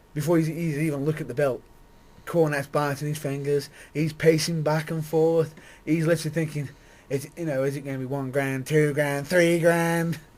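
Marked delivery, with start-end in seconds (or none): 7.1-10.2 imitated American accent. Acting out a man's thoughts before he looks at a bill, in an American accent. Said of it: "that that was an American accent".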